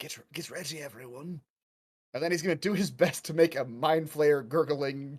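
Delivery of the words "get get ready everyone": hushed, very quiet half-whisper. Voicing a character warning the group while hiding: half-whispering in character. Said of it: "Volrov's just gonna whisper".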